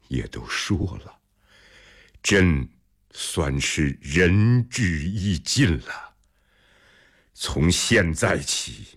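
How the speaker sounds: plain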